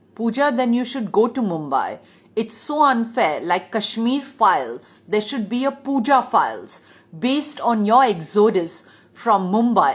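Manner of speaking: ordinary talk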